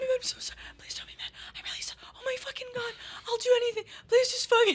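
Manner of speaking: whispered, desperate, begging tone under the breath. Retelling what you said back then, acting out a whispered plea. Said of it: "you were whisper you were whisper pleading".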